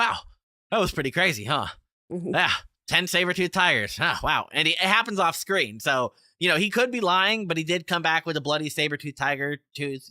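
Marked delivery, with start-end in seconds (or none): 0.0-4.5 mock dry, offhand, casual deadpan understatement. Speaker acts out a film character's reaction, retelling a deadpan line. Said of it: "he's perfect because he's like deadpan".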